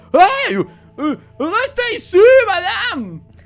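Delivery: very loud, very high, very slow booming shout. Voicing two guards as a player slips between their legs: guards calling out. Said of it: "les deux gardes sont juste comme".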